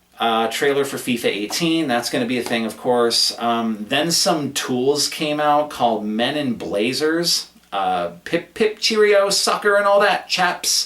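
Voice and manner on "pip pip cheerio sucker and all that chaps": very high, bad put-on British accent. Joking about presenters called Men in Blazers coming out: horrible British accent. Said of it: "that's my horrible British accent".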